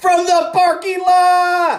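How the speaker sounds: very high scream, stretched out a lot. Retelling the famous call of a three-pointer: imitating Gus Johnson screaming. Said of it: "he's screaming".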